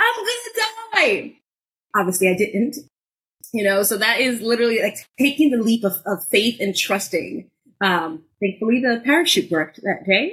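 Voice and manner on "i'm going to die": very high, shrill, wild panicked screaming. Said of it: "screaming like a mad person".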